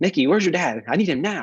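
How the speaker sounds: mock urgent, high, slightly panicked voice. Retelling your sister's phone call asking for you, imitating slight panic. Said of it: "it was a little bit of a panic there".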